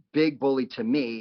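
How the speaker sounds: ordinary talk, nothing marked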